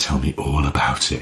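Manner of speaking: coy, very flirtatious voice. Retelling how a colleague responded to a researcher: imitating a very flirty voice. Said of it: "in a very flirty voice".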